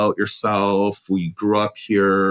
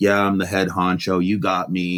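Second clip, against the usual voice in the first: mock cheap sarcastic, snide sneering tone; 2 semitones lower than usual. Retelling a suspect's police interview: imitating Pickton's snide mutter. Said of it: "say things kind of under his breath, like".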